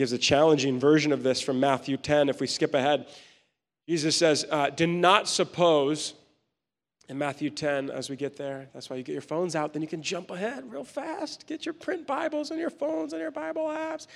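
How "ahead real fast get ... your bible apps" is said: very high, small, soft voice. A speaker jumping ahead to Matthew 10 with listeners, high-pitched voice. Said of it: "I don't know why my voice got so high".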